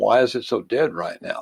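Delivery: ordinary delivery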